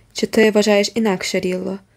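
ordinary delivery

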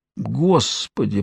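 faint, barely audible moan under the breath. Narrator reading the professor freezing in a cave, moaned barely audibly. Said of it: "простонал профессор, чуть слышно".

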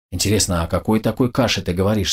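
ordinary delivery

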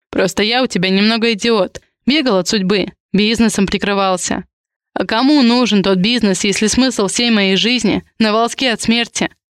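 ordinary delivery

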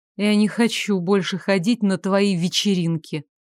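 ordinary delivery, nothing marked

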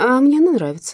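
petulant, sulky tone. A woman answers a man glad that another woman has left, capricious. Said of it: "капризно заметила Карина".

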